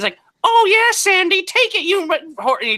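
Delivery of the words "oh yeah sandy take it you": very high, loud, shrill squeaky cartoon voice. Retelling a comic's stand-up video where he told dirty jokes, in a SpongeBob voice. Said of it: "he does his SpongeBob voice".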